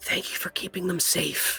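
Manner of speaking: hushed whisper. An unfamiliar voice speaks into the listener's ear, whispering. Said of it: "it kind of whispers into your ear".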